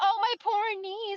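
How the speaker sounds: mocking put-on voice. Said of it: "I, like".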